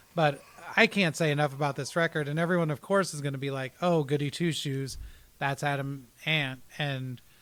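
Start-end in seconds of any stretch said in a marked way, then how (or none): none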